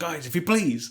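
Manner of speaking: squeaky, really high voice. Retelling a moment from an argument, in Pat's really high voice. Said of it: "in a really high voice".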